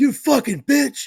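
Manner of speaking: high, loud, slow, furious yell.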